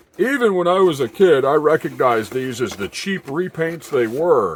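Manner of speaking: sarcastic mocking tone. Quoting what some collectors claim: imitating others in a mocking tone. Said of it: "the mocking tone in my voice".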